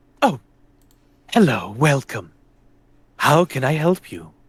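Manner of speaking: eager, servile robot voice. Game master voices the store's protocol droid as a player steps in, protocol droid voice. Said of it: "droid kind of rushes over Kate Vuna".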